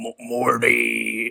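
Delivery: croaky voice with drawn-out word. Again doing the Rick voice saying his one word: Rick impression. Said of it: "he only knows one word".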